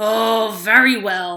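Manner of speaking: loud, growled troll voice. Narrator reading a fairy tale, the Troll answering the goat: growling troll voice. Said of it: "growled the Troll".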